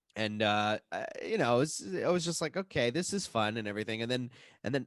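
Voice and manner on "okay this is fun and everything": plain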